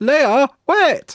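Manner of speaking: very high, earnest, loud calling voice. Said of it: "He does the voice so well".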